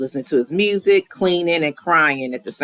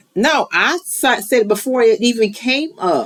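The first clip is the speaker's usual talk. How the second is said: voice climbing very high, rising, insistent pitch; 9 semitones higher, 3 dB louder than usual. Insisting to the other speaker he named seven draft rounds first, voice rising. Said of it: "why's your voice raising?".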